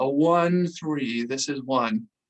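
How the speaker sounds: put-on scornful voice dripping with disdain. Retelling a radio reply from someone angry with them, imitating a disdainful voice. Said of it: "You can just hear the disdain in his voice".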